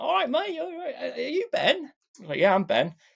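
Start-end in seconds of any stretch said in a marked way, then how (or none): 0.0-1.8 put-on Cockney accent, pitched very high. Quoting a cockney broker greeting him, in cockney accent. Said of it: "a Cockney guy, you know, the Cockney accent".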